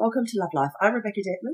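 very hoarse, croaky, squeaky speaking voice. Host opening the show while processing emotions, croaky, squeaky voice. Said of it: "very croaky, squeaky voice".

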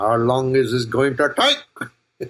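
put-on slow, drawn-out, drawling Indian accent. Speaker addressing his audience quotes King Julien from Madagascar, in his Indian accent. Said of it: "he says in his Indian accent".

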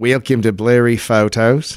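put-on poorly done Australian accent. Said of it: "It's not a good Australian accent".

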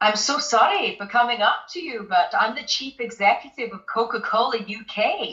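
beautiful put-on Scottish accent held throughout. Retelling a stranger's greeting on a street: imitating a scottish accent. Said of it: "he had this beautiful Scottish accent".

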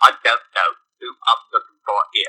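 put-on British accent. Showing how the detective role would not be done: Michael Caine voice. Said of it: "talk like Michael Caine".

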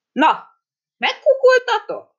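very high-pitched, lofty, haughty, disdainful taunting tone. Narrator reads the beetle's words to the staring crowd, in a haughty tone. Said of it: "fennhéjázó hangon tovább folytatta".

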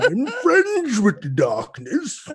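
loud, booming villain voice with swooping pitch. Joking that every masked villain sounds like Bane: Bane voice. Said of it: "everybody gonna sound like Bane".

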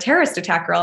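plain

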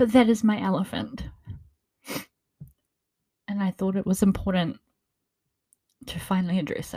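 tearful voice, crying while talking. Naming the painful core of Walnut Wednesday: crying while talking. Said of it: "I'm sorry, I keep crying".

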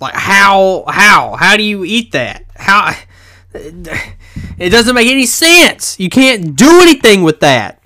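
annoyed, exasperated, high-pitched angry ranting. Complaining that the chips are far too hot: angry ranting. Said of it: "now I'm just angry".

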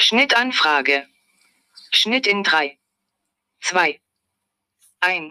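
put-on robotic voice. Explaining the podcast's cut-request signal to listeners; robot voice. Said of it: "eine Roboterstimme hört".

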